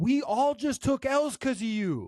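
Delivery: angry outburst voice. Retelling what a fighter said to a teammate after losing: imitating someone getting really mad. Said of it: "he gets really mad at Super Hot".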